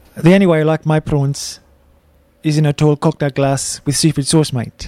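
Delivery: Afrikaans-accented voice. Guest, urged by a co-host to get close to the mic, attempts an Afrikaans accent. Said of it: "I'm ready to attempt my Afrikaans accent".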